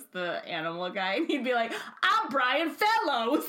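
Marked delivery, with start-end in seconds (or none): 2.0-3.4 very high, loud host-style announcing voice. Recalling a comedy sketch, imitating Tracy Morgan as Brian Fellows. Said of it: "when Tracy Morgan would do Brian Fellows".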